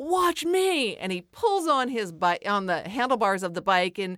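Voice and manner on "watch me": mock show-off yell, high pitched. Retelling a bike ride on the beach, quoting what another rider yelled: retelling a yell. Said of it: "And Lola yells".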